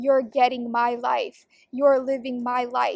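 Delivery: put-on scornful, contemptuous delivery. Retelling what she used to say, imitating a scornful tone. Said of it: "she would say it scornfully".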